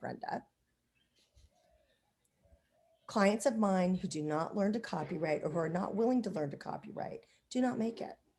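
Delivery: very sweet, honeyed, sugary delivery. Retelling a coach's warning about learning copywriting: imitating a very sweet voice. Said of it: "leaned forward in a very sweet voice and went".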